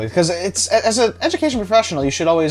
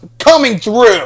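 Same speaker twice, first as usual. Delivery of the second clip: loud, angry, shoving-through shout; 5 semitones higher, 8 dB louder than usual. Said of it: "just push them and say".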